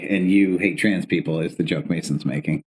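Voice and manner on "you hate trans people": plain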